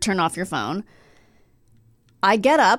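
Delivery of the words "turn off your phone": quiet, low mutter under the breath. Retelling how another moviegoer spoke: imitating Jimmy muttering. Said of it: "Jimmy muttered".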